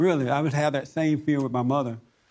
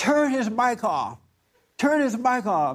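mock hissy-fit shriek, high and screaming; 8 semitones higher than usual. Retelling a hearing where a woman jumped up: imitating a woman screaming. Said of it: "up there screaming and yelling".

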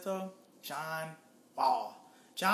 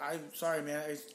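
put-on nervous apologetic pleading tone, quieter; 2 semitones lower, 5 dB quieter than usual. Acting out backing down after someone asks "What'd you say?": put-on nervous apology. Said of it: "I'd be like".

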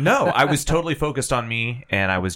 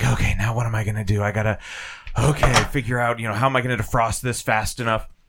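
muttering under the breath. Retelling own muttering in the kitchen: imitating muttering under breath. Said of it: "I was literally muttering under my breath".

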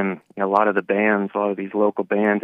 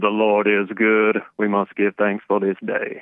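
put-on preachy voice. Opening a call-in by acting like Jeremiah: imitating Jeremiah. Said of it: "just acting like Jeremiah".

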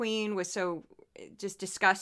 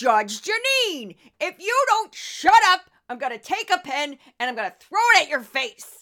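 goofy, loud, pitched-up, exaggerated voice; 6 semitones higher, 7 dB louder than usual. Throwing in a voice you haven't done in a while, for no reason: goofy Judge Jeanine voice. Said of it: "I haven't done her in a while".

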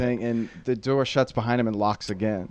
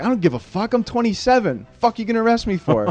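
very high-pitched, defiant shouting; 11 semitones higher than usual. Telling a story, the speaker acts out a man answering a cop: retelling a yell at a cop. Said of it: "And he's just yelling".

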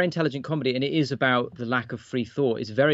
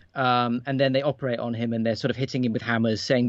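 normal talking voice

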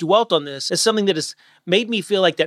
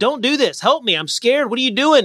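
mock small child voice, high, terrified, panicked screaming; 6 semitones higher than usual. Retelling being trapped in a hole as a child: retelling own screaming. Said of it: "I was screaming".

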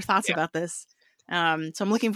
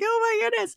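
very high-pitched, excited squealing exclamation. Retelling hearing the announced name, face in the pillow: retelling an excited cry into a pillow. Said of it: "put my face in my pillow and be like".

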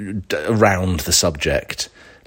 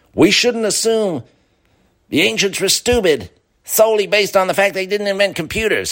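bad, very high, strained-sounding fake American accent; 13 semitones higher than usual. Voicing a documentary interviewee saying the line: constipated terrible american accent. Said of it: "that sort of constipated, terrible American impression accent".

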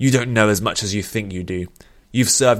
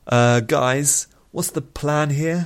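nervous, anxious, high-pitched and very slow; 6 semitones higher than usual. Elrann asks the others about the plan, nervous. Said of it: "Said Elrann nervously".

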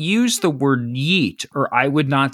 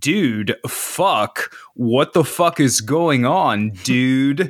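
put-on American accent with a ridiculing tone. Describing a sketch where british guys mock americans, in a mocking american accent. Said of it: "they were talking in American voice".

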